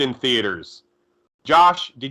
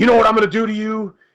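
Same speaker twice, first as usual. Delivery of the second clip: tough-guy, confrontational, in-your-face, pitched up; 8 semitones higher, 4 dB louder than usual. Retelling a movie scene where he confronts the guys: Hulk Hogan impression. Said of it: "and he's like".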